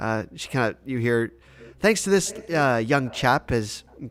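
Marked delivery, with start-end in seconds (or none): none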